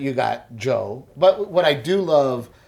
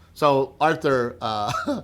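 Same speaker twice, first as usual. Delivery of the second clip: ordinary delivery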